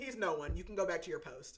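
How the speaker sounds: ordinary talk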